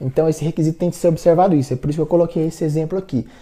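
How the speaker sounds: quick, rattled-off, sped-up speech.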